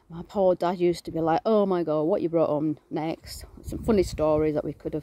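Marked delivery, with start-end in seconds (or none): none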